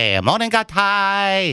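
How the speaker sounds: put-on Chinese accent, high-pitched, long and drawn out. Greeting the other speaker while imitating someone at the Kowloon: put-on Chinese accent impression. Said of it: "Who is that an impression of?".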